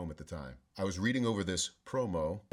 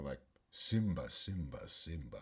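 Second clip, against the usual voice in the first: deep, low cartoon villain voice; 5 semitones lower, 4 dB quieter than usual. Retelling asking whether to put on the voice for a promo, Scar voice. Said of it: "you mean put on the voice?".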